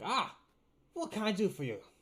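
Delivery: shrill, very high, very loud goblin voice. Describing a goblin jumping up behind a counter, speaker voices it: male goblin voice. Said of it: "then a goblin jumps up in".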